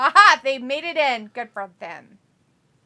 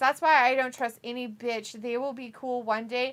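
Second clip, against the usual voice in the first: ordinary delivery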